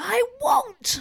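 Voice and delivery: mock shrill, very high-pitched shout. Summarizing a Harry Potter scene for co-hosts, retelling Harry's yell. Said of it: "he yells".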